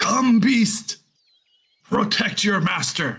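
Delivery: high-pitched dragon voice. Voicing a dragon that roars a command at a beast: dragon roaring. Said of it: "The dragon roars out".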